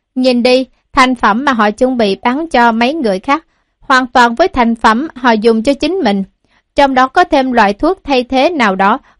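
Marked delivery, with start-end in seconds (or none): none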